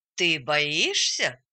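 mocking, derisive tone. Reading a story, a teacher turns to a boy who told his friends to stay: mocking. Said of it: "Насмешливо учитель повернулся к нему".

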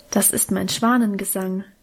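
ordinary talk

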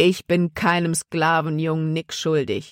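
plain

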